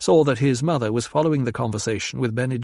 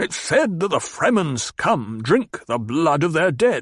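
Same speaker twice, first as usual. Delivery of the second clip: irate, cross voice, pitched up; 5 semitones higher than usual. Reading a novel, a banker puts down his fork and speaks: angry voice. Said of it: "spoke in an angry voice".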